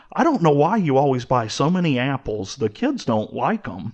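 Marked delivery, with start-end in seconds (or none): none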